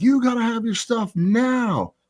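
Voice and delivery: very high, shrill, bossy yell, drawn out. Retelling how a backstage lady yelled at competitors: imitating a lady yelling. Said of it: "this lady was really yelling at us".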